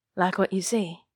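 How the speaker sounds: plain reading voice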